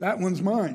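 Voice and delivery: ordinary talk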